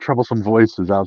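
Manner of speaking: ordinary delivery, nothing marked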